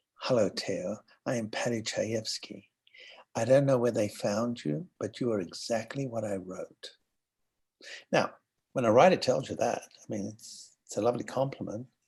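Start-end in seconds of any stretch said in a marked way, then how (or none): 0.2-6.9 soft hushed half-whisper, close and private. Retelling how the writer came up and half-whispered a greeting: imitating someone half-whispering. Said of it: "comes and whispers in my ear".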